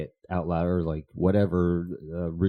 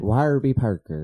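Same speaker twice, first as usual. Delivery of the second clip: loud speech with Pennsylvania accent; 4 semitones higher, 5 dB louder than usual. After the other host points out the accent, repeating the brand name: Pennsylvania accent. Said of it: "You had like a Pennsylvania accent".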